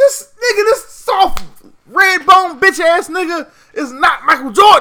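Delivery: heated, angry tone. Arguing that a player is being wrongly compared to michael jordan, angry. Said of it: "why are you so angry?".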